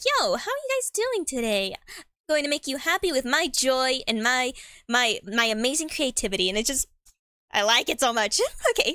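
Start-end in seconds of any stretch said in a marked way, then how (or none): 0.0-6.5 put-on sweet old-cartoon character voice. Describing old cartoons, imitating a very sweet character arriving, sweet old-cartoon character voice. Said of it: "a very sweet like character just comes in being like".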